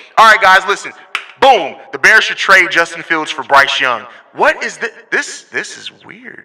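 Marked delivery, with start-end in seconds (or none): 0.2-4.1 very loud, rushed, blown-out, distorted microphone voice. Speaker showing how C Dub sounded earlier on the show, like C Dub's mic. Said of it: "this is what C Dub was sounding like".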